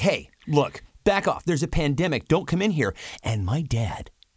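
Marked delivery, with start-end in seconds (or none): 0.0-2.9 annoyed tone, higher. Retelling telling a neighbor to back off: retelling his own angry warning. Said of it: "my dander gets up immediately".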